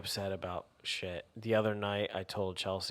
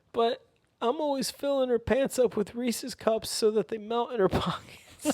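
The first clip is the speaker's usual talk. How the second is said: mock, very high, loud, sob-laden crying voice; 8 dB louder than usual. Retelling own sleep-talk to a partner, imitating own crying-like speech. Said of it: "speaking like you're crying".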